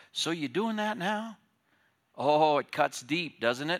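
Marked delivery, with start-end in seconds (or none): 0.1-1.3 very soft, high, hushed half-whisper. Acting out the Holy Spirit's question about loving one's wife: half-whispering very softly. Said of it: "the Holy Spirit just whispers very, very softly".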